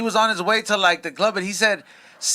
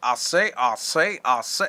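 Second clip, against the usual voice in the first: whispered, breathy southern drawl in cartoon rooster voice; 7 semitones lower, 4 dB quieter than usual. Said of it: "the chicken from Looney Tunes".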